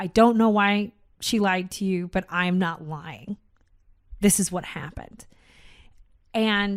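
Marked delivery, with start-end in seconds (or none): none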